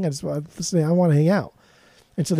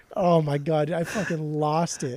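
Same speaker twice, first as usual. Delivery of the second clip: ordinary talk, nothing marked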